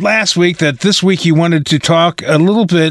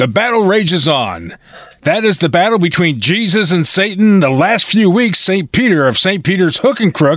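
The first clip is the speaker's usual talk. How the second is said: put-on news-anchor newscaster voice. Doing a news report bit in a put-on newscaster voice. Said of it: "what do you think about my news voice?".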